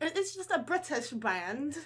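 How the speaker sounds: fake, mocking British accent. Teasing another speaker who slipped into a british accent; mocking british accent. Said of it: "That's even worse".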